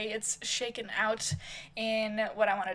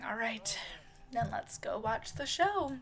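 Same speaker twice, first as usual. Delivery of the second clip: soft, resigned, sighing delivery; 6 dB quieter than usual. Voicing a character not happy with the outcome: sighing. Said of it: "Sighing one more time and saying".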